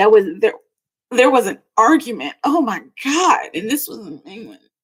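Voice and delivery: rushed, tumbling words, overcome with emotion. Reading the Two of Swords card, the speaker stops, overcome with emotion. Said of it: "That hit me hard".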